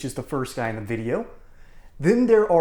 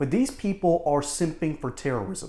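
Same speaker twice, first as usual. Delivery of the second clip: plain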